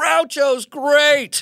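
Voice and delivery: very high, shrill, full-lung shout. Recalling spotting a hero from the top of a stairwell, the speaker retells a scream. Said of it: "I scream at the top of my lungs".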